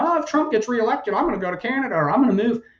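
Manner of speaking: high, fast, mocking whine.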